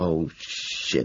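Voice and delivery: muttered under breath. Waving a gun at a panicking driver, the narrator mutters. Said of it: "I mutter".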